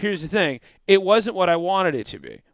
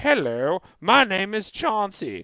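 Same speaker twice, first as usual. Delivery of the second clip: slow, put-on English accent, alien voice; 3 dB quieter than usual. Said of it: "English accents or Southern accents".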